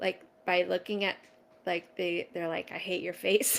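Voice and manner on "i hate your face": riled-up, hateful little creature snake voice. Imitating a worked-up baby snake glaring at its keeper: imitating an angry baby snake. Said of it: "really worked up and angry".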